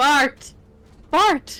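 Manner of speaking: loud, screaming yell. Calling out to a buddy over voice chat, screaming a name. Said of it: "Why are you screaming at me?".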